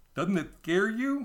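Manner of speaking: silly, goofy, high cartoon moose character voice. Reading a story aloud, the narrator voices the seagull's question: Bullwinkle accent. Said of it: "I'm just basically doing a Bullwinkle accent".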